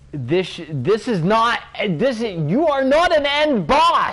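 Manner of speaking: very high, rising, furious angry yelling. Player pissed off at a game area and its boss, yelling. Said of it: "I'm sorry, I'm yelling".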